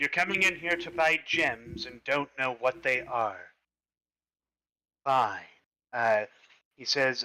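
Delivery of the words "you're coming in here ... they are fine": pompous, haughty high elf voice. Voicing a high elf gem seller to players: pompous high elf voice. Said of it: "he's kind of a pompous rear".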